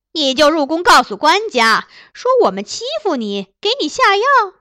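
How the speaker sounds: loud swooping cut-in. Reading a story: a woman raises her voice to cut off the princess. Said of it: "杨氏拔高音量堵回公主的话".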